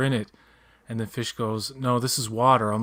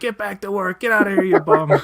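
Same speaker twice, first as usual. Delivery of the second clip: very high, shrill, very loud screaming; 9 semitones higher, 9 dB louder than usual. Retelling a movie scene where a woman yells at a character: imitating a woman screaming. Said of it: "the woman's, like, screaming at him".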